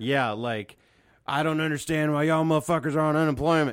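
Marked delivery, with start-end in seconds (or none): 1.3-3.7 strong, thick Texas accent. Showing the pilot character's kind of accent: big-truck Texas accent. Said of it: "Like, that accent".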